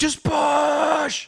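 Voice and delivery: very high, rough, raw, drawn-out screaming shriek. Recounting a game moment, retelling his own scream. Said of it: "Listen to me screaming, dude. I'm like".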